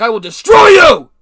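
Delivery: very loud, high, booming, enraged, raging shout. Retelling a schoolmate pinning him against a locker: imitating someone in a rage. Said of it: "sent into a narcissistic rage".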